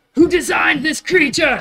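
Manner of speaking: very high-pitched yelling. Retelling what a character yelled during the fight: retelling a character's yell.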